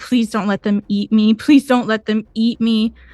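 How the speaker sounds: frantic, desperate pleading. Voicing a wounded character stumbling out of darkness: frantic begging. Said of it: "frantically just begging".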